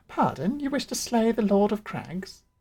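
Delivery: high-pitched cat-like voice. Trying out a voice for a cat character, the speaker delivers a line in cat voice. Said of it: "for a cat voice".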